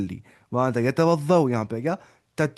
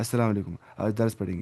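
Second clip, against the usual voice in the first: flat, dull, dreary, boring delivery; 3 semitones lower, 4 dB quieter than usual. Showing how a sermon opening greeting sounds boring: boring delivery. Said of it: "वो लगता है ना boring".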